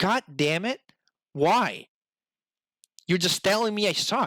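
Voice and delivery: angry, fed-up, frustrated outburst. Recalling a game offering to lower a boss fight's difficulty, speaker retells getting mad. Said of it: "I got so mad".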